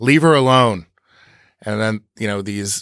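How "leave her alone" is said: firm, very authoritative, commanding voice. Retelling how a man confronts a cowboy grabbing a woman, imitating a very authoritative tone. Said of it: "in a very authoritative tone".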